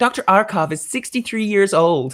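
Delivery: put-on American accent. Quoting a line as Christmas Jones, Denise Richards American accent. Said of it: "That was my Denise Richards uh, Christmas Jones impression. That's actually how I can do an American accent".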